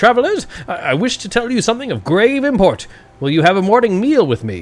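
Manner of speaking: orc voice swinging high and wide in pitch. Game master voices an orc speaking to travelers through a door, Elder Ushru voice. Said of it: "the voice of Elder Ushru, the orc of the pair".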